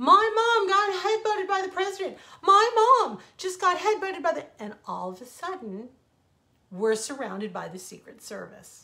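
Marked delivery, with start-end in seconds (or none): 0.0-4.6 put-on shrill, very loud, very high top-of-the-lungs boy's yell. Retelling how Ian yelled at the TV cameras: imitating a boy yelling. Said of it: "he's yelling at the top".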